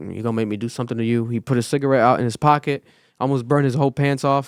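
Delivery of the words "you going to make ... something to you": put-on muttering under the breath, lower and quieter. Retelling a line muttered after rushing back inside: imitating mumbling under breath. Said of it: "he kinda mumbled under his breath".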